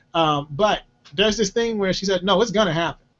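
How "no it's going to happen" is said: firm, resolute, certain tone. Imitating how Jules says something will definitely happen: firm, certain tone. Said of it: "there's this tone y'all probably have not heard from Jules".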